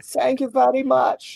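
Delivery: put-on German accent. Thanking the dice bot for a good roll, as asked: german accent. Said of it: "in an accent".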